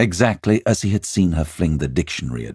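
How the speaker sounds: ordinary delivery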